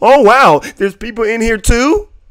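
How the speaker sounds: very high, loud, wide-open feigned astonishment. Mocking a guy who acts surprised after being told not to, imitating someone acting surprised. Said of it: "and then he wants to act surprised".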